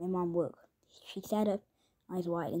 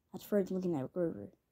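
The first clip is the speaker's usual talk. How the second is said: plain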